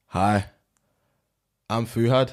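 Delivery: Austrian-accented voice. Taking a turn at the same accent bit, the speaker introduces himself: Arnie impression. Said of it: "All right, you go now. Same thing".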